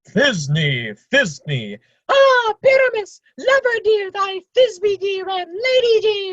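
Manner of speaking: tiny, small, very high-pitched voice. An actor asks to play a second role too, monstrous little Thisbe voice. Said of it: "I'll speak in a monstrous little voice".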